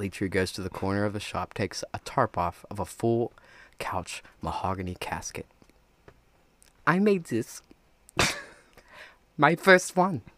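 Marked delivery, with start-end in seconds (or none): 6.9-10.2 put-on German accent with raised pitch. Showing off a mahogany casket he made, spoken in a German accent. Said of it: "Now you sound German".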